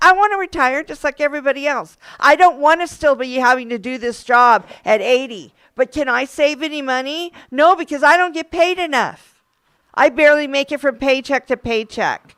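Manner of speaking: speaking out in open, heated anger. A worker speaking about pay during a contract fight, sounding angry. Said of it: "I'm sorry if I sound like I'm angry".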